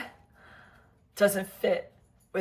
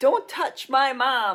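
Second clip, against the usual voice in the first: mock yell, high-pitched and slow. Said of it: "like he's yelling at her".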